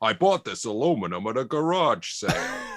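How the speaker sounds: put-on American accent. Saying a test sentence for voice cloning in an American accent. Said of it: "my American voice".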